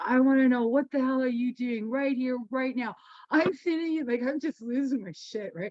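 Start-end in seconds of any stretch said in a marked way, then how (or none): 0.0-2.9 mock-angry acted-out outburst. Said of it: "I'm just so angry at Bon Jovi".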